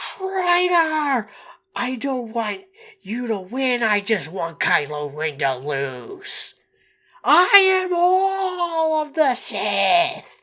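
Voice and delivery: mock ranting villain scream, loud, shrill, swooping wildly. Contrasting sequel trilogy villains with the calm original ones, imitating screaming villains. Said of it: "and everyone is screaming".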